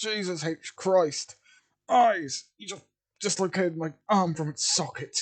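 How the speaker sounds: high, loud, agonized screaming. Voicing a character whose arm was just dislocated: screaming in pain. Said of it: "he sort of screams in pain again".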